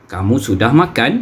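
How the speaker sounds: question-like intonation. Malay grammar lesson on question sentences, question intonation. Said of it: "Itu ialah intonasi ayat tanya".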